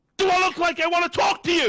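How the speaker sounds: very high, loud, furious screaming outburst. Speaker retells a man who got up from his laptop: imitating a man screaming. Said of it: "started fucking screaming".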